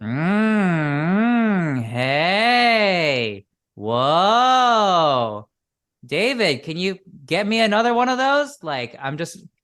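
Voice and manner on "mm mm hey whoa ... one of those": ringing resonance, very slow, "mm" drawn way out. Showing how to project the voice: more resonance without more volume. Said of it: "I'm amping up the resonance, but I'm not necessarily amping up the effort or the volume".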